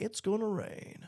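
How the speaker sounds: breathy, badly done whisper. Quoting a line during a weather stream: horrible Ollie Williams impersonation. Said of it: "That was a horrible Ollie Williams impersonation".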